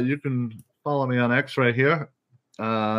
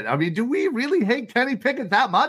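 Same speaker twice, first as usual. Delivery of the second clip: high, far-reaching, thickly sarcastic disbelief. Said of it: "I'm being sarcastic".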